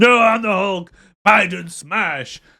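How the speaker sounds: drawn out, high, boastful. Joking about Biden becoming the Hulk: Biden as the Hulk. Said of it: "Imagine if Biden became the Hulk".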